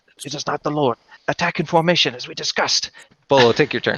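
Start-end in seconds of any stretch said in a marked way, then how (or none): 0.3-2.9 muttering under breath, higher pitch. Voicing three sentries who don't stand down, muttering under breath. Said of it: "mutter under their breath".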